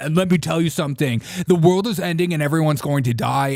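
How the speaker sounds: mock loud, escalating, dramatic doom-laden ranting outburst.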